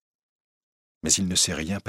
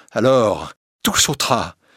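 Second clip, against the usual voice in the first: usual speaking voice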